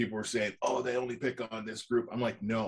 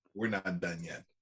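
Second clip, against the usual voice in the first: put-on Bronx accent, lower pitch; 4 semitones lower, 3 dB quieter than usual. Echoing a film villain's line with a bit of a Bronx accent: Kylo Ren with a Bronx accent. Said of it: "he said it with a bit of a Bronx accent".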